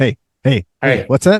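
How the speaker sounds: put-on talking dog voice. Imagining a podcast with a dog: imitating a talking dog. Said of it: "it would just be you and the dog, like, going".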